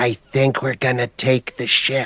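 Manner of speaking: barely audible, very quiet half-whisper. A tiny squish pokes Ari's ankle and tells her something; very quiet half-whisper. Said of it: "whispers very quietly to her".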